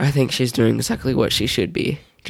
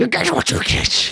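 very high, spooky, creepy put-on voice; 12 semitones higher than usual. Describing a ride, quoting him still doing his creepy voice. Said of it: "he's still doing his creepy voice".

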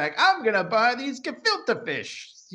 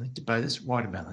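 soft, very low, shy and sheepish voice; 7 semitones lower, 6 dB quieter than usual. Retelling a story, acting out what Leon said, imitating Leon, mock-sheepish. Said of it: "Like all sort of sheepish".

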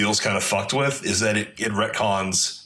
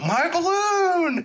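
put-on very high-pitched, childlike little kid's cry. Recalling a game kid who cries out: imitating a kid in a game. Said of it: "that fucking kid who go".

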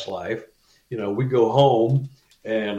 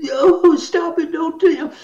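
put-on sobbing like ten-year-old boy, higher, louder; 5 dB louder than usual. Retelling own words under hypnosis: imitating sobbing like a ten-year-old boy. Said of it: "sobbing uncontrollably and talking like a ten-year-old boy".

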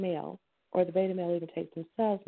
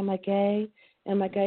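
ordinary delivery

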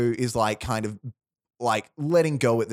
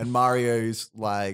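ordinary talk

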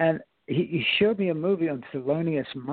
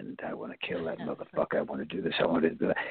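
menacing, hushed, breathy villain whisper; 11 semitones lower, 5 dB quieter than usual. Recalling the audition video for a Clint Eastwood film, bad guy voice. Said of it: "I talk like this, like a bad guy".

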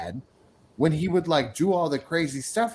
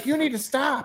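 acted yell, pitched much higher; 11 semitones higher than usual. A man recounts how she yelled at him, a 12-year-old, to stop, retelling her yelling. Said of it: "she would, like, yell at me to stop".

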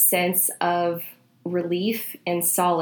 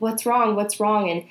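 usual speaking voice

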